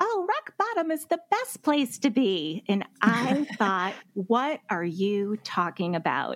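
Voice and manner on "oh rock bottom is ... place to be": very high, sweet, swooping sing-song voice. Recall the author talking to Oprah, in a sweet little Glennon Doyle Melton voice. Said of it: "she says in her sweet little Glennon voice".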